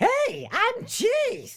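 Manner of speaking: very high, zany cartoon rabbit voice. Retelling a booth request to say a line as Roger Rabbit: Roger Rabbit voice. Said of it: "in the voice of Roger Rabbit? And I went, ... Like that, right?".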